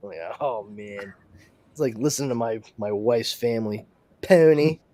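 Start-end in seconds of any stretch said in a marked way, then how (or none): 4.2-4.7 put-on Philadelphia accent, higher and louder. Showing how an actress does a philadelphia accent in a film: imitating a philadelphia accent.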